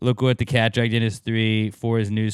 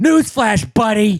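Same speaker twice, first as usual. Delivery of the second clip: mock angry man voice, higher and louder; 10 semitones higher, 5 dB louder than usual.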